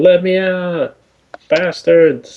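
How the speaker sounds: slow, high, drawn-out hollering yell. In a role-play, a character stuck behind bars calls out, yelling. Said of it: "I'm just going to start yelling".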